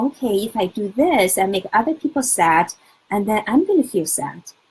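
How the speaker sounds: ordinary talk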